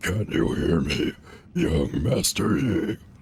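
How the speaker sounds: big, deep, slow, gruff lion growl. Trying a voice for a character's line: big gruff lion voice. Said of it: "Big gruff lion. I could try the Bowser voice".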